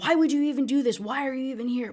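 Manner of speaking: put-on yelling. Retelling how a character yelled at her: imitating someone yelling. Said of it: "he's yelling at her".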